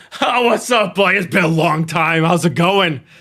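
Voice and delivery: put-on very loud, high-pitched drunken giant voice. Voicing a super drunk Goliath greeting a player character: drunk Goliath voice. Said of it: "this really super drunk Goliath immediately comes up to you".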